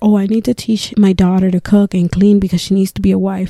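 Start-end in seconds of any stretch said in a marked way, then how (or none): none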